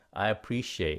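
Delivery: quick, brisk phrase at natural speed. Modeling the English word appreciate for Vietnamese learners, said quickly. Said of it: "Nói nhanh này nha".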